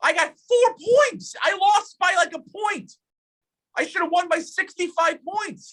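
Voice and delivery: put-on elf voice, pitched very high. Arguing over a past game, the speaker slips into an elf voice. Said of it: "the elf voice did come out".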